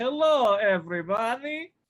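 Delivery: very high-pitched cartoon-style voice. Showing the others the voice heard in their head: Dr. Nick voice. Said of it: "is it the doctor from The Simpsons?".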